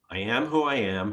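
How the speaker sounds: ordinary delivery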